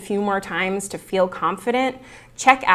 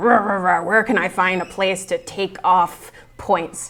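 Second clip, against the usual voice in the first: put-on growling voice, slower pace. Explaining how students imagine teachers grading exams, growling mock teacher voice.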